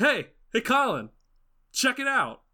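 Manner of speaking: blaring, way too loud, high-pitched voice. Voicing a character who shakes colin by the shoulder: talking really loud. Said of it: "really loud".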